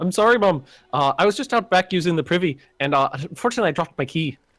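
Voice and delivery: badly done, terrible put-on Irish accent. Playing a scene, speaking to a mom character: bad Irish accent. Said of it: "I'm going into the Irish accent now, which is terrible".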